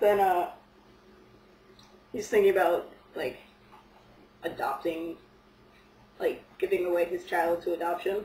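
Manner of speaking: speaking while eating, between bites. A speaker telling a story, having just apologized for eating, talking while eating. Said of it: "sorry I'm eating".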